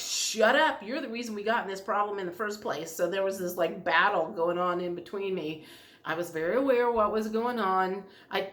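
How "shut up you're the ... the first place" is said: plain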